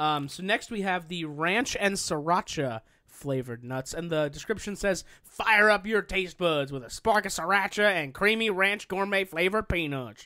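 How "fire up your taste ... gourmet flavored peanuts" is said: put-on cowboy accent. Reading a snack package description aloud: put-on cowboy accent. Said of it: "does it ask you to do that accent?".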